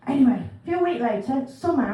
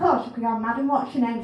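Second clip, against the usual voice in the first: usual speaking voice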